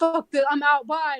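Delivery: screaming, slow and dragged out. Retelling how an angry customer stormed out: imitating someone screaming. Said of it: "he was, like, screaming".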